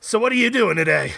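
put-on middle-aged woman voice. Speaker retelling a woman at their car who asked for a cigarette, imitating her. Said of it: "the 55-year-old woman voice".

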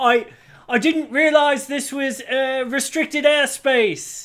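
calling out. Voicing a flying character calling out to those throwing spears at him, calling out. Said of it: "he calls out".

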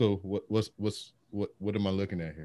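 flat, unbothered, unfazed deadpan. Retelling how one girl reacted to the video: imitating an unfazed girl.

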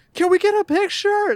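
mock shrill, very high, loud shouting. Retelling how someone yelled to another person over passing cars, mock yelling. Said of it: "he's yelling at Bray".

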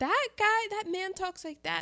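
soft, high-pitched voice. Describing how a man talks, mimicking him: quiet, high-pitched voice. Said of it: "in a very quiet, high-pitched voice".

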